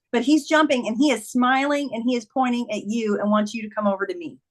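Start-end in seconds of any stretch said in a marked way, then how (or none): none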